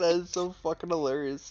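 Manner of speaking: laughing through the words. Reacting to another player's confusion, laughing while talking. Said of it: "you're making me laugh".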